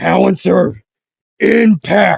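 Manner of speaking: high, rough, raw-throated shouted yell. Retelling a fan fight scene, voicing Bakugo: yelling as Bakugo. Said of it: "Bakugo would yell".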